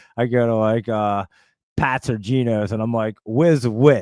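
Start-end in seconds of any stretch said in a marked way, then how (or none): 3.3-4.1 loud, thick, exaggerated Jersey accent, laid on heavy. Retelling how they order a cheesesteak: thick Jersey accent. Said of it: "the craziest Jersey accent".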